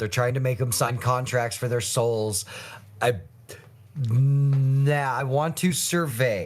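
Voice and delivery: ordinary talk, nothing marked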